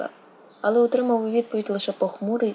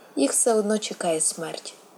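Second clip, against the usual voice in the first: ordinary delivery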